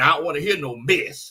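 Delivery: country-flavored way of talking. Reading a viewer's chat message aloud the way John would: imitating John. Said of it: "You gotta say it like John".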